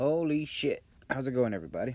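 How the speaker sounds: loud, full-on put-on Texas accent. A speaker greets everybody at the start, in a Texas accent. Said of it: "Did I sound Texas enough for you?".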